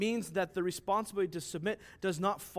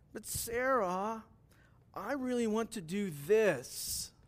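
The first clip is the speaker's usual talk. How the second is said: drawn-out, very slow, whiny pleading tone; 3 semitones higher than usual. An example of manipulation, said in a whiny voice. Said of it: "Here's an example in a whiny voice".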